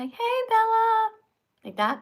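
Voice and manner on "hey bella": put-on very high-pitched baby talk voice. Showing how people talk to their dog bella, baby voice. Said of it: "talk to animals with a baby voice".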